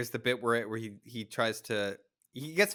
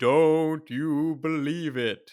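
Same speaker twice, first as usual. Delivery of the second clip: high, loud, spooky ghost voice; 5 semitones higher, 8 dB louder than usual. Retelling a cartoon scene where Tom faces the camera, in Tom's spooky ghost voice. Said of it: "says in like a spooky ghost voice".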